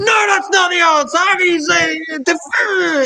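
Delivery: very high, shrill, heated yelling. Describing people arguing over answers in a yeshiva: imitating people yelling. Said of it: "you've got people yelling".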